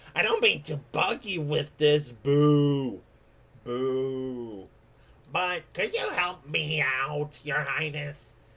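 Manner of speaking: very loud cartoon cat voice. A storyteller voicing a bug-hating feline character, in a cat voice. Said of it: "doing the cat voice".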